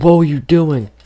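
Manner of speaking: play-acted high, screaming voice. Retelling a principal screaming at kids: imitating a principal screaming. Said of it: "She screams, she's like".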